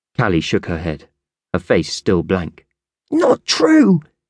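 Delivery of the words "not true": very high-pitched, shrill yell. Angel shouts in protest while thumping her fists on the bed, shouted. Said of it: "Angel shouted".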